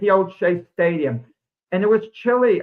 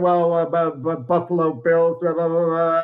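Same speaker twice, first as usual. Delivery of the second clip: jittery, unsure, nervous, hesitant delivery; 3 semitones lower than usual. Retelling an elevator encounter, the speaker voices a man imitating a nervous man. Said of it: "like he's nervous".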